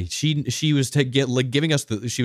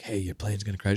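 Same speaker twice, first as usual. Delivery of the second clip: acted-out whisper, quieter; 3 semitones lower, 7 dB quieter than usual. Retelling how a flight attendant leaned in to them on a plane, imitating a whisper. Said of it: "the flight attendant coming up and whispering like".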